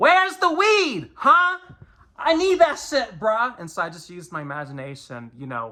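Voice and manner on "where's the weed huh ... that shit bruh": mock very high, loud, drawn-out craving yell. Speaker recalls screaming lines over Rodan scenes, retelling a screamed line. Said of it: "while screaming those lines".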